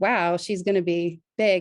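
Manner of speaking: usual speaking voice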